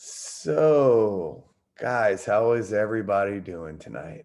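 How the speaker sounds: very slow, deliberate, drawn-out delivery. Greeting the group to show what not to do: talking slow and quiet. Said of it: "Why am I talking slow and quiet?".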